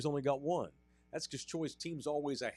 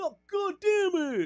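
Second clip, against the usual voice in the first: put-on East Texas accent, higher and louder; 7 dB louder than usual. Imitating Patrick Mahomes refusing an X-ray: Patrick Mahomes East Texas accent. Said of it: "With that East Texas".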